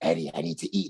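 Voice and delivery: dark, menacing, low sinister voice. Saying how he should have done the voice: sinister Eddie voice. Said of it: "just like a fucking sinister voice".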